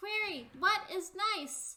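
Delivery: loud, very high-pitched call from a distance. Narrating a scene, the speaker voices someone calling from a little ways away: loud distant voice. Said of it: "a loud voice from a little ways away goes".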